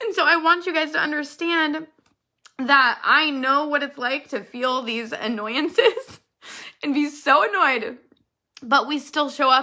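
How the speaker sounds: crying while speaking, tearful voice. Speaking to the group about always showing up, crying while speaking. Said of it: "I cannot stop crying".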